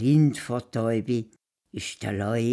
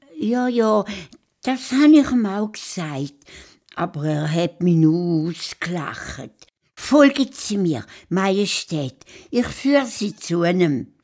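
sly hare voice, high and raised; 8 semitones higher, 6 dB louder than usual. Narrating a story, the hare answers the lion king: clever hare character voice. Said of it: "Der schlaue Has hat seinen Schnauz zwirbelt und ist fröhlich zu seiner Frau und zu seinen Kindern gekoppelt. / sein Schnauzbart zwirbelt und sich auf den Weg gemacht zu der Leuenhöhle. / Der Vater Has".

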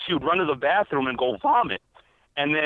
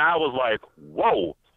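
plain

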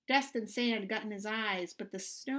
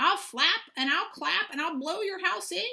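high, loud, squawking eagle bird-of-prey cry; 7 semitones higher, 5 dB louder than usual. Reading a children's story aloud, the eagle swoops down on Mimby's house, squawking eagle voice. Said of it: "he squawked".

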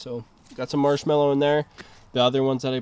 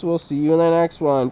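robotic voice, faster; 3 semitones higher, 6 dB louder than usual. Host signing off an episode of the Urban Permaculture Garden, in a robotic voice. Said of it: "Robotic voice".

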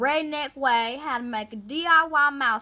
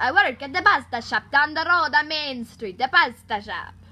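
English with a put-on Italian accent; 4 dB louder than usual. Demonstrating accents one after another, playing a pasta shop worker, Italian accent.

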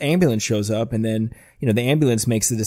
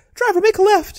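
very high-pitched little cartoon mouse character voice; 4 dB louder than usual. Retelling a cartoon scene, Mickey speaks to the driver: Mickey Mouse voice. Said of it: "I like your Mickey Mouse voice".

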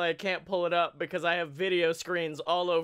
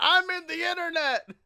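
very high-pitched, put-on yelling; 12 semitones higher, 4 dB louder than usual. Relaying a Twitch chatter's messages, mock-yelling in an Alex Jones voice. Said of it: "just yelling".

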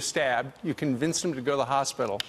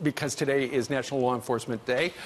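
ordinary talk, nothing marked

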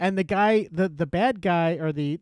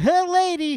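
very high, zany, screwball comic voice; 12 semitones higher, 4 dB louder than usual. Riffing on a gangster losing the money in an action movie, in a Jerry Lewis-style voice. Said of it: "That was kind of a Jerry Lewis".

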